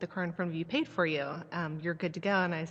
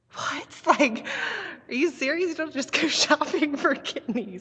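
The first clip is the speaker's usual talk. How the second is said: put-on very high, loud, incredulous outburst; 10 semitones higher, 8 dB louder than usual. Retelling own reaction when he said he'd see about a kidney, retelling own disbelief. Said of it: "I couldn't believe it".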